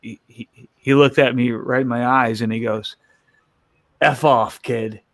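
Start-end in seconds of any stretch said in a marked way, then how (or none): 4.0-4.9 put-on joking rude tone, slower. Retelling a man's reply to the speaker's offer to carry bags, retelling a teasing insult. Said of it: "he was just kind of ribbing me".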